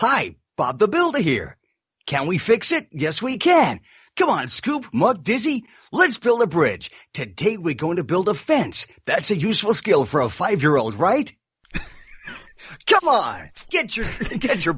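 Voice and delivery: high, sing-song American accent swooping up high. Asked for an American character, the voice actor demonstrates: Bob the Builder American voice. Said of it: "we want to hear one of your characters that's American".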